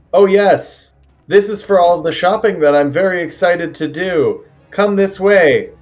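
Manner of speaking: very loud, high-pitched voice, almost yelling. Game master voicing a character leading the group somewhere, speaking very loudly. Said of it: "she's gonna yell very or speak very loudly".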